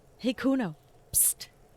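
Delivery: hushed, high little whisper with a psst. Trying to get Kuno alone, speaking to him: whispering. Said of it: "Fuck you whispering about?".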